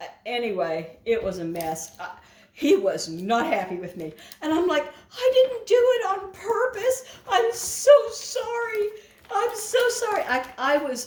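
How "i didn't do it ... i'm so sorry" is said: acted upset, near tears, very high pitch. Retelling a mishap, the speaker replays apologizing to the man who was unhappy, near tears. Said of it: "upset enough that I felt like I was going to cry".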